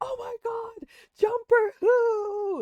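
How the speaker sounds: put-on very high yell, stretched-out word Who. Recalling friends watching a video together, retelling a crowd yelling. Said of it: "everybody was yelling".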